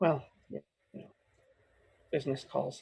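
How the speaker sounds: voice taken down, low and soft. In character, excusing himself and leaving the others: dropped voice. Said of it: "I drop my voice a bit and just kind of say".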